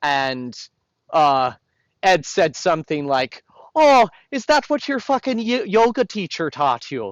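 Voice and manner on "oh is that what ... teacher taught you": put-on very high, swooping, botched Irish accent. Retelling a cutting remark Ed once made: imitating Ed's Irish accent. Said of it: "a bastardized ver-, version of his Irish accent".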